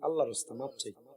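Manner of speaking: fast soft hush.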